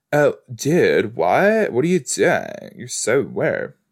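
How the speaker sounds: animated high-schooler talk with swooping pitch. Speaker showing how teen shows make them talk, talking like a high schooler. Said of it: "begin to talk like a high schooler".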